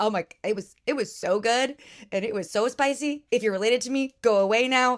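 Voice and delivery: ordinary talk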